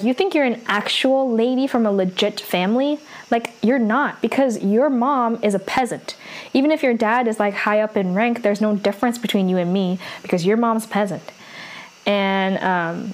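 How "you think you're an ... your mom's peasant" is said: plain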